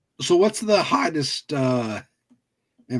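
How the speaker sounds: voice cracking and breaking on the words. Chatting with friends about game consoles, the speaker asks a question: voice cracking. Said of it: "my voice cracked".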